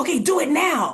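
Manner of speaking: play-acted, amped-up, high-pitched, stretched-out delivery. Retelling a man's order amid a noisy background of screaming, mimicking an amped-up voice. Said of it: "his voice was really like amped up".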